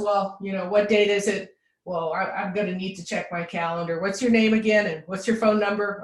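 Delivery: ordinary delivery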